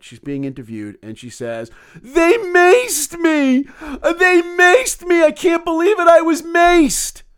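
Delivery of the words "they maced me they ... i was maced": play-acted very high, loud, anguished, very slow, drawn-out distress. Retelling a viral video of a woman interviewed during the riot, imitating her very upset and emotional. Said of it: "She's very emotional during the riot".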